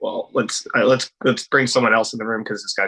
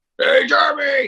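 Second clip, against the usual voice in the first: very high, shrill, loud shouting; 5 dB louder than usual. Retelling a phone call from his boss: imitating Todd. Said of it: "This is how my boss sounds".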